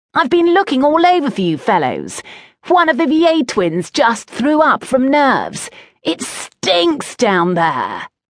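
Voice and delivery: put-on high, swooping boy's shout, calling out. Reading a story, a boy bursts in on the others; shouting. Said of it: "a boy shouted".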